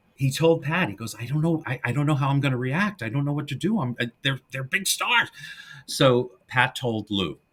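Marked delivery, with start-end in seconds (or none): 1.1-5.3 fast, jittery, stumbling, nervous rambling. Retelling what a nervous actor said before his first scene: imitating nervous Patrick Knowles. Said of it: "He was nervous".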